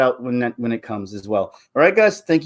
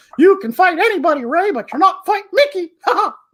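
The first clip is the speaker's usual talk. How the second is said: very high, fast, squeaky cartoon voice. Speaker plays Mickey taunting Ray, in a Mickey Mouse voice. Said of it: "Mickey's the one who Force chokes everybody".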